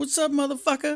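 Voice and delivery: very high-pitched, curt, short little voice. Showing the others how the pet Jake sounds in his head: voicing pet Jake, high-pitched. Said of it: "Jake's voice in my head is kinda high pitched".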